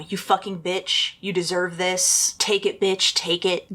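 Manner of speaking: ordinary talk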